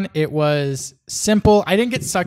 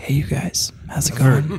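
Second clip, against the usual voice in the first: casual mumble with words mushed together; 3 semitones lower than usual. Imitating how a quiet friend talks on the mic: imitating Peter mumbling. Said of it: "Peter just mumbles".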